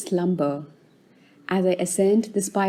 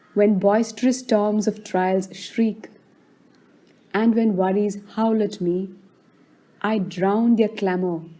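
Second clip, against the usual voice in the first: ordinary delivery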